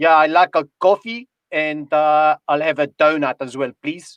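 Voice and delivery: put-on Afrikaans accent. Speaker retells ordering at Tim Hortons in Toronto, South African Afrikaner accent. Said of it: "like an Afrikaner accent".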